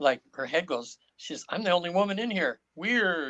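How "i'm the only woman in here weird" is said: put-on incredulous disbelief, higher. Retelling what a woman in trance said in class: imitating an incredulous tone. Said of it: "And incredulous again".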